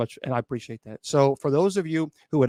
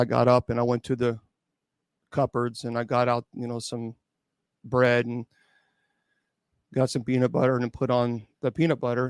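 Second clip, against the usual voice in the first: put-on flat monotone, lower in pitch; 3 semitones lower than usual. Describing how a man recounted his actions, imitate his flat monotone. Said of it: "the tone was mo- very monotone".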